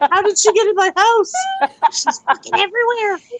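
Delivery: high fake panicked squeal.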